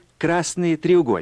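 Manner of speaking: plain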